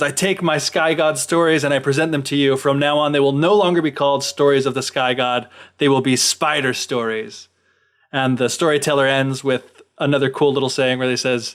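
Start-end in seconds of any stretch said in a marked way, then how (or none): none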